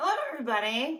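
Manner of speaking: voice cracking and breaking, high and loud. Greeting everybody on a wednesday, voice cracking. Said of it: "My voice cracked there a little bit".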